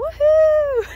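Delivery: very high, loud whoop.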